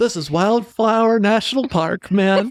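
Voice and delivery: drawn-out, slow, high put-on voice. Joking about the person who designed the park website: imitating the website designer. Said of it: "don't do that voice".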